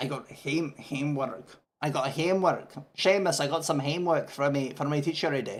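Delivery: regional, local Scottish accent. Speaker shows off their accent from a place in scotland; scottish accent. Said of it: "That's me doing my accent for some place in Scotland".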